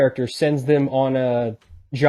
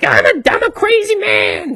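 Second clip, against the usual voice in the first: very high, loud, slow, drawn-out whine; 7 dB louder than usual. Imitating an actor who does a whiny voice: Charlie Day's whiny voice. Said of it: "He's like".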